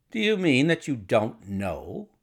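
ordinary delivery

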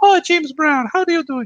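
put-on tiny child's very high-pitched chirpy voice. Retelling what a little four-year-old called them: imitating a four-year-old. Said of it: "this little four-year-old was calling me".

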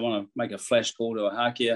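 ordinary delivery

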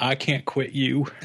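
poor film-quote voice. Talking about still watching NCIS, quoting in a very poor Brokeback Mountain voice. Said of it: "you started yawning when you said".

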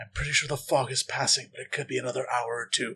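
quiet, hushed, under-the-breath aside. As the player turns around, the character speaks in a lowered voice. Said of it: "Fred lowers his voice like".

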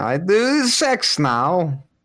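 put-on Kazakh accent. Doing a Borat impression after being told he sounds like Borat: Borat voice.

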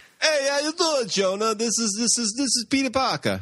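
put-on Brooklyn accent. Joking about the next Spider-Man movie, imagining Peter Parker in a Brooklyn accent. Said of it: "seriously, Brooklyn accent".

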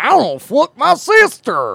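sing-song put-on Southern accent, loud, swooping. Showing how different people sound, the speaker demonstrates a mock cracker accent. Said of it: "Crackers sound like this".

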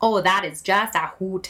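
chatty, homey, put-on Midwestern accent. Joining a story about a Midwestern massage therapist, in a Midwestern accent. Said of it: "I can like pull off a way better Midwest yeah. accent".

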